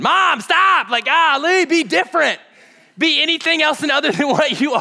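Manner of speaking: put-on shrill, rattled, very high-pitched yell. Acting out losing patience with Mom at the holidays: imitating someone yelling. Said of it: "I'm yelling already".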